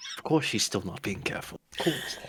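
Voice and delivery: low mumbled mutter under the breath. Voicing a character in a game scene, muttering under his breath. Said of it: "Veldrin mutter under his breath".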